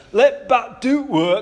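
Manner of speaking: put-on thick, broad, very slow, drawn-out Yorkshire accent. Retelling a batting coach's advice in the nets: imitating broad Yorkshire accent. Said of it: "he had a really broad Yorkshire accent".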